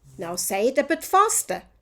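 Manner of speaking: usual speaking voice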